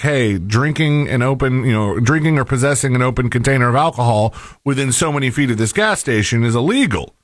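plain

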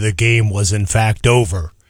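low, storybook-style narrator voice. Recapping the end of a football game, switching into a narrator voice. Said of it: "using my narrator voice".

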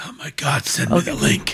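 muttered quietly under the breath. Reacting to a jet ski mention from another speaker: said under the breath. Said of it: "why did you say it like that under your breath".

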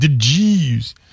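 mocking, imitated emphasis on one phrase. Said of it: "Like the way you say it. You're like".

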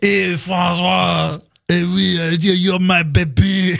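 very slow, exaggerated, put-on French accent. Joking about saying a child's French name the French way: mock French accent. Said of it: "I'm so sorry to all the French people".

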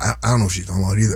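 put-on whisper. Imitating a man heard whispering in the background of a hearing: imitating someone whispering. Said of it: "Hear that dude whispering in the back?".

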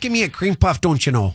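joking Wisconsin accent. Speaker, prompted by the other host to do the accent, in a Wisconsin accent. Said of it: "I don't even know how to do the accent. You're better at it".

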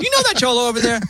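happy, cheery tone.

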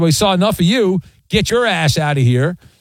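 usual speaking voice

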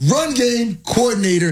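run game coordinator enunciated, each word pitched high.

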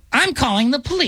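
piercing, shrill, very high-pitched voice. Imagining how a woman complained when she could have been cool, in a put-on ear-piercing Karen voice. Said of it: "That just typical Karen voice".

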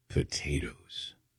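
solemn delivery, low and slow.

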